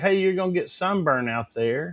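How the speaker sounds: plain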